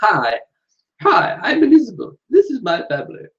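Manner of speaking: put-on clumsy queenly English accent. Reading a viewer's idea aloud, imitating the Queen: bad Queen Elizabeth II accent. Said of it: "my Queen accent's not very good".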